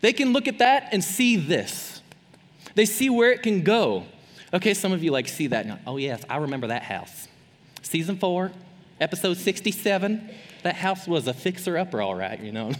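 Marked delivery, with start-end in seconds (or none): 5.9-12.4 sudden switch to put-on Southern woman's accent. Acting out a fan of a home makeover show: put-on Southern woman accent. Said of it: "I just turned into, like, a Southern woman".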